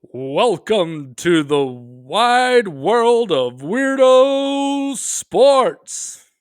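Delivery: big, high, wide, drawn-out sports announcer voice. Asked to do the announcer voice thing to open part two: announcer voice. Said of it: "Do you need me to do the announcer voice thing?".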